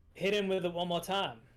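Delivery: called out, as if to someone away. Voicing a character pulling an ally away, yelling back: yelling in character. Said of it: "Doc turns and yells back to Budge".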